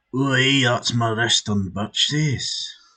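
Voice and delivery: high put-on Scottish accent. Coaching a friend on emotional delivery, then trying a line in a scottish accent. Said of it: "That sounds more Scottish or Irish".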